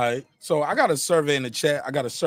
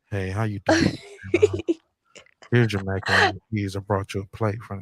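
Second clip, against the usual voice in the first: very low, swooping, flirty voice; 7 semitones lower than usual. Describing how a man talks to the speaker, imitating a flirty man. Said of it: "he talking to you with the [name] voice".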